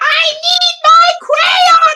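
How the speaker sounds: piercing shout, very high and very loud. Speaker recalls a favorite scene from a show, acting out a line: imitating Cassie's yell. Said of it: "Cassie yells out for her crayon".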